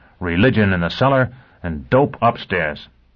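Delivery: ordinary delivery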